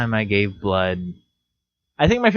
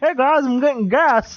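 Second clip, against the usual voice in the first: high, teasing, mocking impression. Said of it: "And you were just like".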